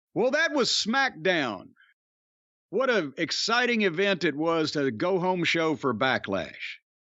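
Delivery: heavily sarcastic swooping sing-song with fake excitement. Wrapping up a review of a wrestling show: sarcastic tone. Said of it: "Do you hear the sarcasm in my voice".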